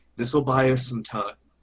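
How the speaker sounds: hushed whisper. In a role-play scene, a player speaks to the rest of the group: whispering. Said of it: "I'm just gonna kind of whisper to the rest".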